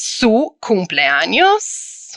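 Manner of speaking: cumpleaños with a questioning rising tune. Teaching how to say a Spanish phrase, with a rising question intonation. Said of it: "And raise it like a question".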